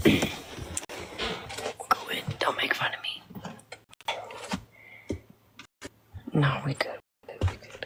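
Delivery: speaking in a whisper. Going inside the house where it has to be quiet, whispering. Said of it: "I don't know why I'm whispering".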